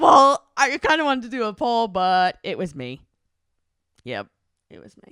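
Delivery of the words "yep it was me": defeated, beaten, breathy near-whisper. Answering who made the first move and admitting it, defeated. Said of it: "why you sounded so defeated".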